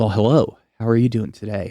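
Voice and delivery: silky, smooth, sultry put-on voice. On a podcast, showing a voice done for someone else: smooth, sultry put-on voice. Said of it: "these are the smooth, sultry tones".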